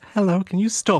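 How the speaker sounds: put-on high little kid's voice. Voicing a small child asking a player to stop: small child voice. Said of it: "you hear a small child like".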